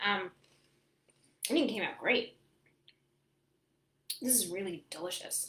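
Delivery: talking with mouth full, chewing between words. Tasting a dish they cooked, the speaker talks while chewing. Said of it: "excuse me for chewing and talking".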